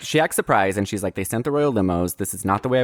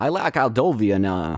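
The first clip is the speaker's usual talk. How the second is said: put-on, imitated Brooklyn accent. Recapping a story, quoting the queen's dad as he gets off the plane: brooklyn accent. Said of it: "has a kind of more real Brooklyn accent".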